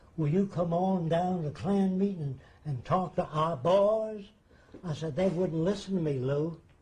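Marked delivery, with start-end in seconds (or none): 0.2-4.2 put-on American Southern accent. Quoting the leader he showed around his lab, imitating Lou's southern accent. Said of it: "he said in his southern accent".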